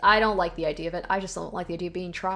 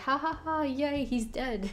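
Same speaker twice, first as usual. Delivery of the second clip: mock laughing, much higher, slower; 7 semitones higher, 4 dB quieter than usual. Retelling how a female character reacted before, mock laughing. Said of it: "she was just like laughing like".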